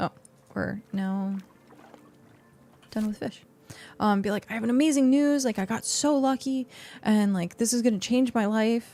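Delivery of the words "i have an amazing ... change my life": put-on, gushing, hyped-up fake excitement. Acting out a joke post that sounds like a lottery win: put-on hyped-up excitement. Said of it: "Hype it up that you just won the lottery".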